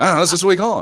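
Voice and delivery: put-on British accent. Acting out an argument about slang, playing the British person: put-on British accent. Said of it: "why are you speaking with that accent? You're British".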